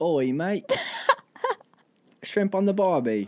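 badly done fake Australian accent, high and swooping. Practicing accents after saying they can't, trying a bad australian accent. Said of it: "Let's practice our accents".

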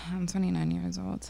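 sounding unhappy. Talking about just turning 29: sounding unhappy. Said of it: "You don't sound happy, bro".

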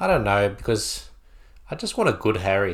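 beaten, deflated, let-down tone. Asked what they think about Harry, answering, sounding defeated. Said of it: "You sound so defeated".

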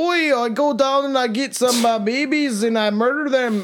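put-on Irish accent. Trying out something different for a joke character, in a put-on Irish accent. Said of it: "He's Irish".

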